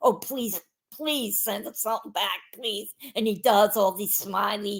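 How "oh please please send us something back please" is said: imitated speech while laughing. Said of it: "the whole time I'm laughing like".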